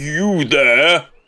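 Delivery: booming voice. In a role-play game, calling out to a character from behind her: booming voice. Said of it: "at this booming voice".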